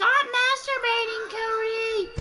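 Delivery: put-on very high, loud, shrill screaming old woman voice. Retelling how cody's grandma screamed: imitating cody's grandma screaming. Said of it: "Cody's grandma screamed for him".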